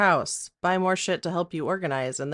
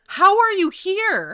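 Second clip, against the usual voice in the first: mock, very high, stretched shocked shriek; 14 semitones higher, 6 dB louder than usual. Retelling surprising her mom in person, acting out her mom's reaction: imitating mom screaming. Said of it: "she screams".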